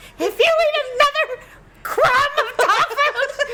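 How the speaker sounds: acted-out, very high, furious, livid scolding. Retell what Mom said about eating the dog food, imitating a livid mom. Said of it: "she was so livid".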